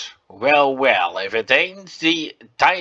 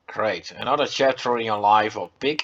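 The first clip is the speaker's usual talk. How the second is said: normal talking voice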